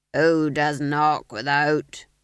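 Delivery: gruff, surly, growling voice. A porter peers out the gate hatch at a knocking soldier, growled. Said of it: "he growled".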